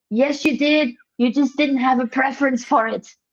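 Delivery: put-on shouting. Complaining about action-movie excuses, he acts out yelling at the television: retelling his own yelling. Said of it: "I'm just yelling at the television".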